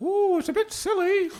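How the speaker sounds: very high, silly, squeaky British puppet-show voice. Imitating recordings of a talking mongoose: bad British puppet show voice. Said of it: "British, um, bad puppet show".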